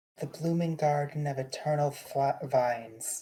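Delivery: ordinary delivery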